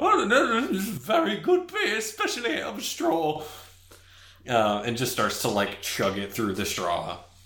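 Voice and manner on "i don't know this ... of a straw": much higher, loud, deadpan mock-serious falsetto. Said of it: "and is like".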